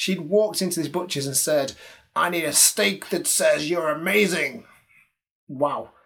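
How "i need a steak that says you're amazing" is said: clumsy American accent attempt. Quoting a woman ordering steak at a butcher's: imitated american accent. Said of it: "excuse my impression, doesn't sound anything like her, but you need to say it in an American accent".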